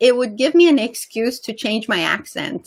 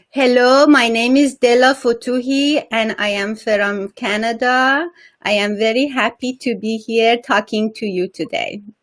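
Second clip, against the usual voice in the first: put-on Persian-accented English. Speaker offers and, when told to go on, demonstrates a persian accent. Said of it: "Do you want to hear my Persian accent?".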